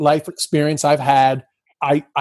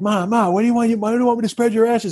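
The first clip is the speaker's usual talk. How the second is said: put-on shouting, much higher in pitch; 7 semitones higher than usual. Retelling the day before her mother died, reenacting shouting at her. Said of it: "I was like shouting at her".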